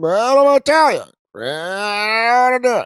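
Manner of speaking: very high, in short bursts, drawn-out "I". Imitating how he talks in bursts: Joe Biden speaking in bursts. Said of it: "He seems to speak in bursts, where he's like".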